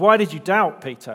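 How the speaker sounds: stern, very loud, harsh scolding tone. Trying out one possible reading of a quoted question, harsh. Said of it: "It could sound harsh, sort of".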